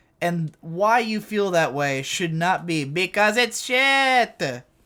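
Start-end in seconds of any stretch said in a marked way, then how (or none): 2.9-4.6 dismissive, high, snooty anime-snob drawl. Mocking what an anime snob reviewer would say: imitating an anime snob. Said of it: "impressing myself with my impression of him".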